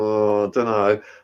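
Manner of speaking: put-on sheepish tone. Retelling how staff answered a minister's question: imitating a sheepish reply. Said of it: "looking sheepish".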